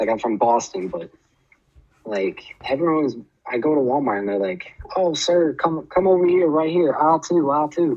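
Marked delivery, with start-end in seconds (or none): 4.9-8.0 put-on high, friendly Southern twang. Retelling how Walmart staff in the South greet a shopper: imitating a Southern twang. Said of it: "that Southern twang really grew on me".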